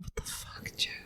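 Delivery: soft, voiceless, shocked whisper.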